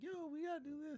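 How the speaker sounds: put-on yelling, pitched very high. Recalling a recording session, retelling someone yelling. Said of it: "Puff is in there like yelling".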